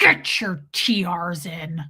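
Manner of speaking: very slow, deep, growled voice. Recalling what he told you while you were crying, retelling a growl. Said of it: "Like growled at me".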